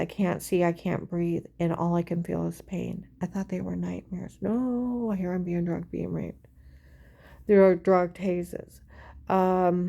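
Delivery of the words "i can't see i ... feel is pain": plain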